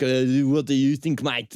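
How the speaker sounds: put-on mashed-up French and South African accent. Imitating a French man educated in South Africa: weird French-South African accent. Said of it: "one of the most fucked accents I've ever heard".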